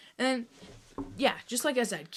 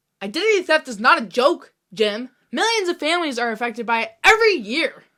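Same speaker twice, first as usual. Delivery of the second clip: loud, high-pitched ranting. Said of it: "that's a quote from our favorite T V show".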